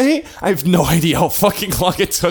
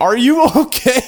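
mock, shrill, high screamed yell; 6 semitones higher, 4 dB louder than usual. Retelling how their mom screamed after them as they went upstairs, imitating mom screaming. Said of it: "as my mom is just screaming".

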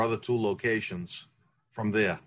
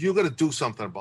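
put-on angry, demanding voice, pitched higher; 3 semitones higher than usual. Retelling a sister's demand from the back of the shop: imitating Maria pissed off. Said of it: "pissed off at me".

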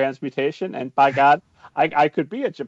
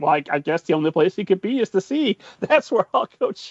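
put-on voice, tripping on the first word, then continuing; 4 semitones higher than usual. Retelling the Disney cartoon, mocking the father's logic: imitating Geppetto. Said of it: "he's like".

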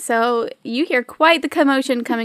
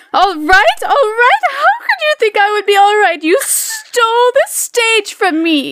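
very high, shrill, raging, swooping diva shriek; 11 semitones higher, 6 dB louder than usual. Telling the story, the speaker voices Carlotta confronting the understudy, screaming in rage. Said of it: "La Carlotta just screams in rage".

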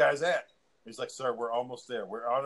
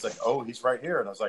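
normal talking voice

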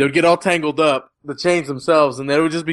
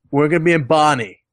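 put-on Cockney accent. Speaker quotes a movie character's line, in Basher's cockney accent. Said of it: "the most cockney thing to say".

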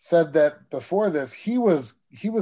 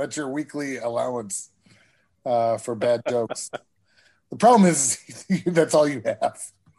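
chuckling, laughing while talking. Teasing the other host about the bad jokes in this episode, laughing at own joke. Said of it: "Sorry, I'm laughing at my own jokes".

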